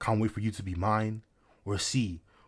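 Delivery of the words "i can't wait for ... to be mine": ordinary talk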